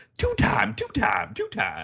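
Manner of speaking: squeaky, high-pitched put-on voice. Retelling how someone said his nickname, high-pitched voice. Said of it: "he would say it in this high-pitched voice where he'd be like".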